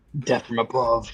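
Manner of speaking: quiet muttering under the breath. Voicing a character hovering above an unaware enemy: muttering under breath. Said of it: "I just mutter under my breath".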